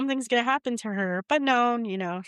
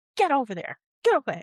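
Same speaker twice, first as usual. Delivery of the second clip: put-on yelling, higher pitch; 6 semitones higher, 3 dB louder than usual. Retelling how a character yells at a rat monkey: imitating someone yelling. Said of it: "he starts yelling at the rat monkey".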